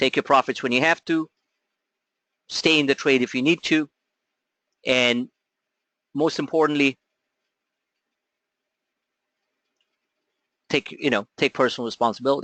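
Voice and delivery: firm, stern, severe no-nonsense tone. Closing advice to the audience: stern. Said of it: "I'm saying this very sternly".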